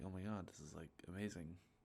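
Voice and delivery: plain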